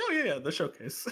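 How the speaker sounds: offhand, easygoing voice. Imitating the other speaker's reply about the showcase: imitating a casual tone. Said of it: "you said that with, like, such a, like, casual tone".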